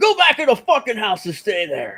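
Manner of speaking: very high, loud, swooping shout. Retelling how a man in a video yelled at his wife: imitating someone yelling. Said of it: "he yells at his wife".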